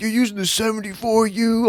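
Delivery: put-on yelling. Retelling how players in a lobby yelled at the speaker: imitating someone yelling. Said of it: "freaking yelling at me".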